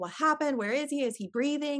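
screamed, high-pitched voice. Recalling a phone call with the people who had him, retelling screaming into the phone. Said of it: "I'm screaming into the phone".

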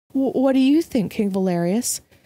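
gentle, kindly tone. Tilly asks king valerius his view, as if coaxing a shy child, kindly. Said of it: "Tilly asked kindly".

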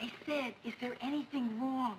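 quiet, low whispering. Drama scene, repeating a question so a sleeping man won't wake, whispering. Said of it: "I'm whispering because I don't want to wake Joe".

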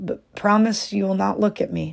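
trembling, quivering voice. A weeping wife gives in to her husband's command, trembling.

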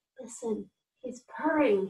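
hushed, delighted half-whisper. The king notices the cat purring: delighted half-whisper. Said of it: "he whispered delightedly".

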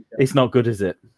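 words breathed out on a sigh. Voicing a guard who looks back toward a house: sighing. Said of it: "he sort of sighs and he goes".

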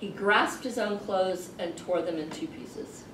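ordinary talk

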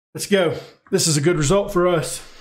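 dry, sarcastic cheer, meaning the opposite. Commenting on a match after conceding a goal: sarcastic. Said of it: "I say in sarcasm".

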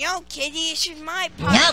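high, loud cartoon voice, words stretched out long. Retelling a South Park scene with Cartman and his kitty: Cartman voice. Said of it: "then the cat comes and he's like".

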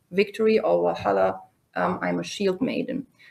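ordinary delivery

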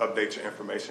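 ordinary talk, nothing marked

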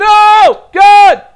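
sudden ear-splitting scream, very high and loud. Talking to YouTube viewers during a game, the speaker suddenly cries out: screaming. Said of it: "I didn't mean to scream in your guys' ear".

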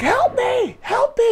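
put-on screaming, crying child voice. Retelling a crying child's calls for help: imitating a screaming, crying child. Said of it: "She's crying like they're killing her".

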